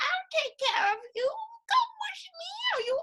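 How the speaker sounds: very high fairy-tale witch voice, drawn out. Retelling what a rich old lady said to him, gingerbread-house witch voice. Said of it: "she sounds like the witch in the gingerbread house".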